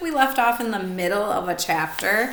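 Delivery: ordinary delivery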